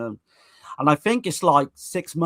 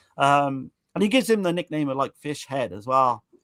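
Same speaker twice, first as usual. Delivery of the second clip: plain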